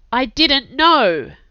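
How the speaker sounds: sharp, high, defensive snap. Jack answers Chase's accusation of betrayal, snapping defensively. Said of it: "Jack snapped defensively".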